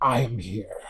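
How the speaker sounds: echoing voice that sounds like someone else's. Voicing something speaking out through a character: echoing voice, not quite his own. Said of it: "it kind of echoes out".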